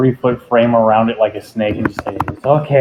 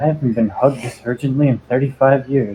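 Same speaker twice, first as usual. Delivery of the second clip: private half-whisper under the breath; 4 dB quieter than usual. Playing Jerry in the scene, Jerry half-whispering to himself. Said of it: "Jerry's going to whisper to himself".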